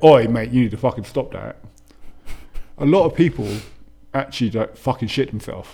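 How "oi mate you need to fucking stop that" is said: stern, strict, severe tone. Demonstrating how the speaker tells people to stop something, stern voice. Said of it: "when I talk to people in a stern voice and say".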